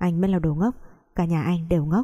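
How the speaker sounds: plain reading voice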